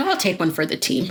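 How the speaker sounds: ordinary talk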